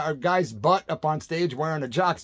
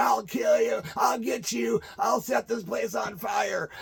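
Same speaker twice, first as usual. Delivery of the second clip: put-on mild, raw, angry drunken rasp, pitched up; 6 semitones higher than usual. Retelling being lifted off his feet by bouncers: retelling an angry scream. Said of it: "as I'm screaming".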